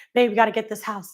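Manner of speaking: acted-out mock whisper. Speaker describes home buyers at a viewing, imitating buyers whispering. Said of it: "But they're kind of whispering".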